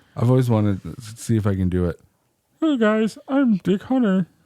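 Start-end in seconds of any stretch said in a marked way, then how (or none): 2.6-4.3 very high, cartoon frog puppet voice. Introducing himself as Dick Hunter in a Kermit the Frog voice. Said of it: "Doing the Kermit the Frog".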